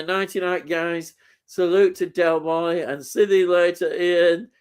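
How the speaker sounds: ordinary talk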